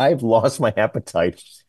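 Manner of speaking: normal talking voice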